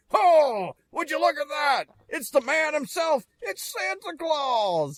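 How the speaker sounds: very high, hyped announcer call with soaring pitch. Retelling a wrestling show where the announcer introduces Santa: Vince McMahon announcer voice. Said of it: "it's Vince as the announcer, like".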